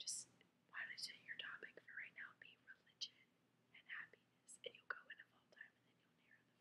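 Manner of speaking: hushed, soft, angelic, whispery teacher voice. Retelling what she said during the talk, imitating her soft voice. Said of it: "I'm speaking in a soft voice because she does".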